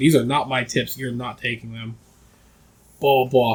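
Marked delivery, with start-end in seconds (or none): 0.0-2.0 put-on angry, furious voice. Retelling a father refusing to hand over the employees' tips: imitating an angry father. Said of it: "my dad was fucking pissed".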